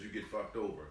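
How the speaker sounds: plain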